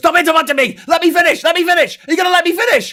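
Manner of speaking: put-on very high, loud, heated yelling in American accent. Retelling two Americans arguing on a show: imitating an American shouting. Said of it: "shouting at each other".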